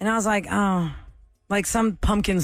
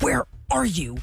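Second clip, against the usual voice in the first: put-on menacing, deathly voice, higher-pitched; 6 semitones higher than usual. Retelling a sister's angry call about the shared car: imitating sister's death voice. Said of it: "her death voice".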